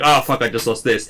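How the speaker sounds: usual speaking voice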